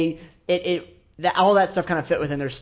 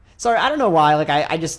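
plain

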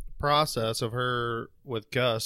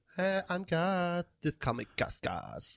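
heavy sexy bedroom voice, pitched up; 5 semitones higher, 7 dB quieter than usual. Imitating Gus in the bedroom: sexy bedroom Gus voice. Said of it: "He's sexy time Gus?".

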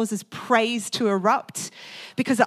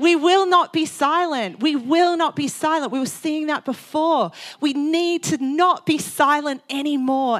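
fired-up, passionate, worked-up voice, pitched high; 5 semitones higher, 4 dB louder than usual. Speaking to a group about testimony, worked up and impassioned. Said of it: "I'm spitting because I'm so worked up about it".

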